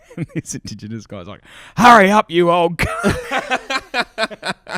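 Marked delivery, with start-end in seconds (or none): 1.8-4.8 shrill, very loud, high, very slow, drawn-out jeering yell. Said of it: "they're just heckling everyone the whole time".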